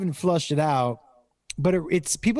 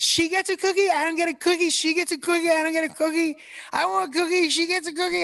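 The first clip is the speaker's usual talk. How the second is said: put-on very high small-child voice. Retelling what a three-year-old kept saying about a cookie: imitating Jacob at three. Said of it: "he was like".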